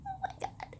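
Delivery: high, stunned whisper. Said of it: "and I was like".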